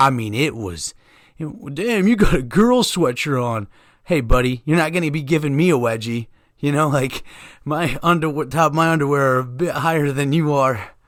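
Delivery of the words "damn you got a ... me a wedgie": needling, jeering, taunting tone. Retelling a man who mocked the speaker's hoodie, imitating his taunting way. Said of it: "But the way he said it".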